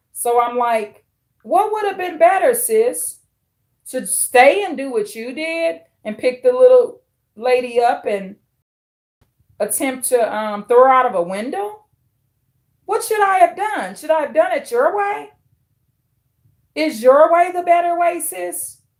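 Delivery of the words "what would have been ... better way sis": pitched-up, dripping sarcastic tone. Retelling her reply to her sister over what happened, mock-sarcastic retort. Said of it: "bringing out my Scorpio sarcasm".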